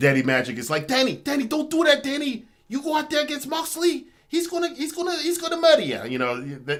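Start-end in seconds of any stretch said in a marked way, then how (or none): 0.9-6.0 very high-pitched, urgent pleading. Pitching a wrestling angle, acting out a warning to Garcia: Danny Magic impression. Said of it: "you know the way they talk".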